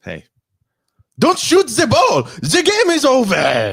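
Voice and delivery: put-on very high, swooping, sing-song French accent. Imitating Schroeder, whose behavior the speakers are mocking, in a French accent. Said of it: "that was one hundred percent French".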